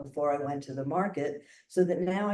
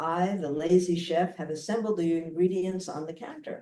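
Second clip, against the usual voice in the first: ordinary talk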